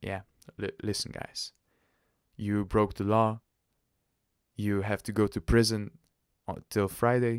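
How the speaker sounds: ordinary delivery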